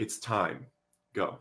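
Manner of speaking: barely-there, soft, breathy whisper. Retelling a moment in the car, the speaker quotes what he said, softly. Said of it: "he said so softly".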